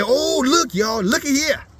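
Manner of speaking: derisive, deliberately poor put-on broken English caricature. Showing how others talk when they mock the speaker's people: imitating mockers' poor english. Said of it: "I'm gonna talk like they".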